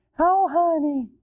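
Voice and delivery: put-on high-pitched baby-talk voice. Speaker mocks how some men talk to their kids, in mocking baby talk. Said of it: "they talk like this to their kids".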